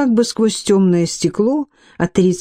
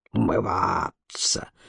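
very quiet, hushed hiss full of disgust; 11 semitones lower, 10 dB quieter than usual. In a read novel, Barquentine reacts to Steerpike's washing habit, hissed with disgust. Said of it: "прошипел Баркентин".

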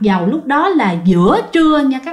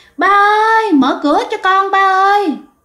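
put-on very high child's calling voice. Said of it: "tiếng kêu của bạn".

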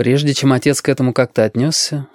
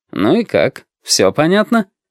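sly, needling, snide, slow sing-song delivery; 4 semitones higher than usual. Reading a story, the narrator voices a father questioning Vitka: snidely asking. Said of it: "ехидно поинтересовался отец".

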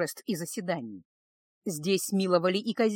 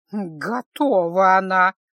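very loud, sour, displeased hissing; 9 dB louder than usual. A naga woman answers the narrator who says she is ready, displeased hiss. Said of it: "недовольно прошипела женщина".

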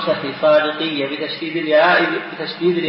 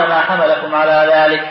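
usual speaking voice

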